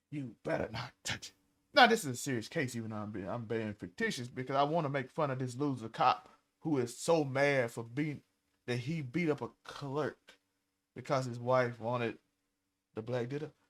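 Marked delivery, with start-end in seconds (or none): 0.1-1.3 put-on angry wrestling boss voice, lower and quieter. Acting out an angry cop refusing the toy: angry Vince McMahon voice. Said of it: "Sound like Vince McMahon back in the day".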